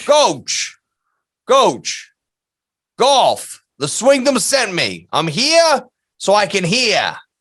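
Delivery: heavy New York accent, laid on thick, swooping. Riffing on an ad for free hearing tests, in a thick new york accent. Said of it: "That's a very thick accent".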